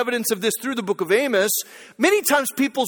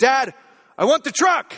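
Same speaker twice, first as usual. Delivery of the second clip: put-on raised child's voice. Father retelling his son demanding a toy truck while they browse, imitating a raised voice. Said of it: "don't raise your voice to me".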